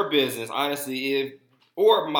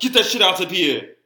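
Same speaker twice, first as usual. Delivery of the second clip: put-on Nigerian accent, loud, raised and high-pitched; 5 semitones higher, 6 dB louder than usual. Explaining to a friend who a former Hawks player is, in a Nigerian accent.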